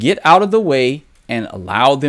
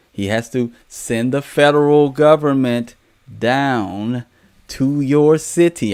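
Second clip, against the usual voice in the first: slowed-down delivery. Speaker slowing down for the people in the back, speaking slowly. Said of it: "I'm saying it slow".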